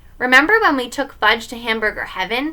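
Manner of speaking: ordinary delivery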